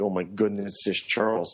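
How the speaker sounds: ordinary delivery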